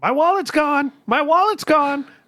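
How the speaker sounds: very high, panicked yell. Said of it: "he just starts yelling".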